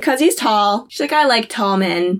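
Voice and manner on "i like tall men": ordinary talk, nothing marked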